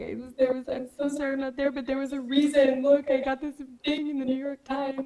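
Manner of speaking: tearful, high crying voice. Retelling an apology call to family about a review: imitating own past crying. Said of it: "crying on the phone to my family being like".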